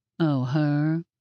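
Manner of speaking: bored, uninterested voice. Narrator reads a character's reply on hearing about a daughter, bored voice. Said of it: "Peaches said in that bored voice of his".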